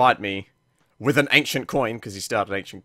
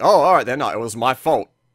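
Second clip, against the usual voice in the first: sarcastic, louder voice; 2 semitones higher, 6 dB louder than usual. Reading out a post-game chat reply from a player: imitating a sarcastic reply. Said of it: "like, sarcastically".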